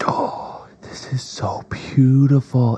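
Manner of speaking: slow, breathless, awed whisper.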